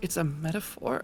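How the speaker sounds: quiet muttering under breath. Voicing a character who repeats the other's words: muttered under breath. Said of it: "under my breath".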